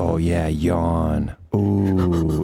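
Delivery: very slow, low, sarcastic fake-aroused drawl. Retelling joking with a yawning girl; sarcastic mock arousal. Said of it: "like sarcastically get turned on".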